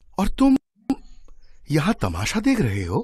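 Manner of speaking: surprised, astonished tone. Speaking to a boy at a fair, with surprise. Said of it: "आश्चर्य से".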